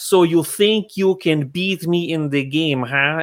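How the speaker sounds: strange, peculiar, put-on Russian accent. Retelling how Malkovich read lines in front of Damon, doing his accent. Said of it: "he did that accent".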